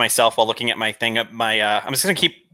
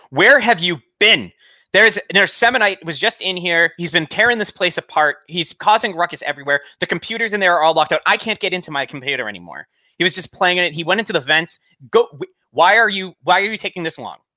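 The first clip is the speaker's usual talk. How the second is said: furious, high, angry screaming rant; 7 semitones higher than usual. A player voices their character screaming at others to provoke them, screaming angrily. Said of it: "start screaming".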